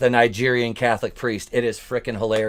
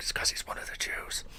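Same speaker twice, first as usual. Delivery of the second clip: whispered, muttered aside under the breath. Imitating what a priest mutters about the speaker: imitating muttering under breath. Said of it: "under his breath".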